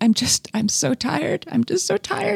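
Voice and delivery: very high, tearful voice, weeping through the words. Retelling a mother's words at the kitchen table, imitating someone crying. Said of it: "she was crying and she's like".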